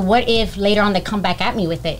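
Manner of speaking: usual speaking voice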